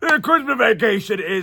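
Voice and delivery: put-on old voice. Joking about a future anniversary episode twenty years from now: put-on aged voice. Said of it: "I don't know why I sound like this twenty years".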